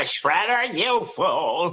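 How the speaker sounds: villain voice, very high-pitched, swooping and swinging wildly. Showing off a favorite cartoon voice: Krang voice. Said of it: "I love doing like Krang from uh, Ninja Turtles".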